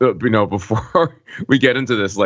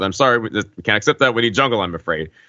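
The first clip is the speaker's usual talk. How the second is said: ordinary delivery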